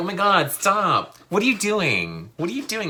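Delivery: playful, high, swooping, protesting tone. Imitating a woman being tickled by a date in a club: imitating a woman being playful. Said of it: "It's playful".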